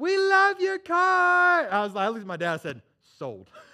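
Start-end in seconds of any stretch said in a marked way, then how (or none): 0.0-1.7 very high, slow, drawn-out put-on girly voice. Retelling girls in a passing car calling out their windows, in a high voice. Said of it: "you just hear this high voice".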